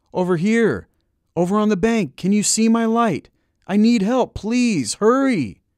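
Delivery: shrill, loud, very high-pitched hollering. Reading the narrator calling from the bank for help, hollered. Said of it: "I hollered".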